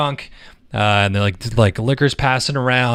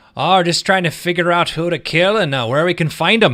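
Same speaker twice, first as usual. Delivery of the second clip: put-on higher-pitched drunk character voice; 7 semitones higher than usual. Answering the party's greeting in character as Sildar: drunk Sildar voice. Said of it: "he's drunk as shit".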